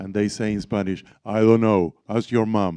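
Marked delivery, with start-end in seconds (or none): 1.2-2.8 mock-deep teasing imitation voice. Retelling how others mimic the speaker in Spanish, in a mock-deep mocking voice. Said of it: "they do a deep voice imitating me".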